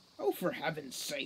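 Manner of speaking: low, grumbling mutter under the breath. Elbowing past the brothers toward the doorway, he speaks: muttering. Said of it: "muttered Root".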